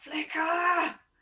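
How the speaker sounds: very high-pitched shout. Five minutes later, a character is heard shouting a name. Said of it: "you hear Alice going".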